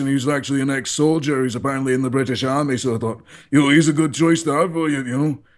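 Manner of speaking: put-on speaking with Scottish accent. Speaker shows how his manager talks, imitating the manager's scottish accent. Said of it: "he talks like this".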